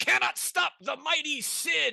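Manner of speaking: very high, shrill warrior battle yell. Narrator voicing the shield-bearer as a player charges in with a mace, yelling as Cid. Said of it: "this guy with the shield yells".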